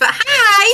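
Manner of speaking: very high, loud, stretched-out, drawn-out hi. Greeting viewers after being asked to speak: loud hi. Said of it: "dial it down a little bit on the hi bit".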